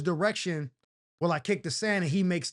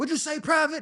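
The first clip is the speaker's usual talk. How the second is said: higher-pitched put-on screaming sergeant voice; 10 semitones higher than usual. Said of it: "he's screaming and he's talking crazy to me".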